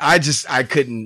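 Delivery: plain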